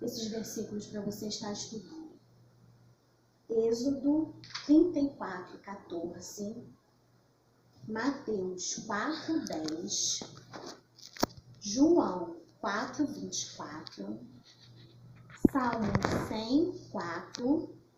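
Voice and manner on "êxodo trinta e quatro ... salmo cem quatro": very slow, unhurried, careful, deliberate delivery. Speaker dictates Bible verse references for listeners to write down, speaking slowly. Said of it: "Eu vou estar falando devagar".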